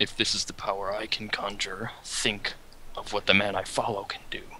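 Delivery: whispering. Storyteller voices a character's reply in a scene, whispering. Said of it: "I notice the fear and whisper".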